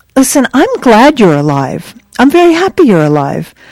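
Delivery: acted-out patronizing, talking-down, condescending sing-song tone. Retelling what a woman said to someone, mocking her condescending tone. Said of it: "Very condescendingly".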